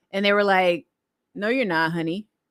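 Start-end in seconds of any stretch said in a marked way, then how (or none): 1.3-2.2 imitated Australian accent. Retelling what people in Australia told the speaker, in an Aussie accent. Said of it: "they said it in their Aussie accent".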